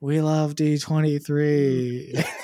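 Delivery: put-on half-hearted, unenthusiastic cheer. Retelling how a few people in the crowd answered, mock half-hearted cheer. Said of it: "Not as enthusiastic as the other side".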